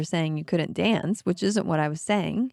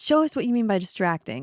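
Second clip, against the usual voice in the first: ordinary talk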